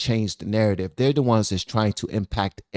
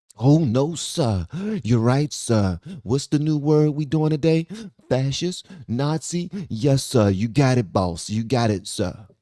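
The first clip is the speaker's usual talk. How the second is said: put-on, obsequious, servile caricature voice; 4 semitones higher than usual. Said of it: "I hate to talk like that because we're making fun of people".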